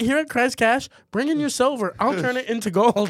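high, salesy tv commercial announcer voice. Doing a mock tv commercial for christ cash: tv commercial pitch voice. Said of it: "He's got, like, a T V commercial".

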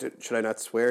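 plain

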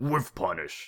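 fighting-game announcer voice. Pushed by the other speaker to do the show intro, giving a Mortal Kombat announcer impression. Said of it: "in your best impression of the Mortal Kombat announcer voice".

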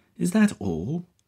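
climbing, exasperated, very high pitch. A woman questions a police officer about the search's lack of progress, voice rising in pitch and volume. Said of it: "her voice rising a couple of notches in both pitch and volume".

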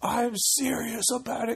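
high, slow mock-serious voice. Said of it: "'cause I use my serious voice".

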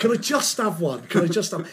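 ordinary talk

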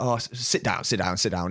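offhand, dismissive, brushing-off tone. Retelling a courtroom scene, voicing the judge: imitating a dismissive judge. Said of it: "So the judge is very dismissive of the woman".

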